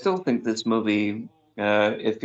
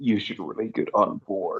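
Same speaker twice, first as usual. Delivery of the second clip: threatening, put-on voice. Recalling a line from a movie clip, in Tom Hanks voice. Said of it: "Tom Hanks's voice saying".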